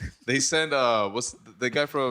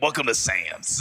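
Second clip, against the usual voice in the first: put-on smoky, raspy old woman's voice. Describing the woman at the hot dog place to friends: imitating Smoke at Sam's.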